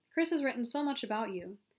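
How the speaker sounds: plain reading voice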